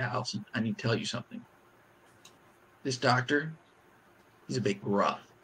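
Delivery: very quiet, hushed voice. Retelling a nurse's warning to a patient in labor: imitating a nurse speaking quietly. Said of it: "real quiet".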